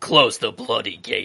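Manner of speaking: voice dropped down deep. The speaker acts out Dolorous Edd's line from a scene, deepened voice. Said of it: "let me deepen my voice too".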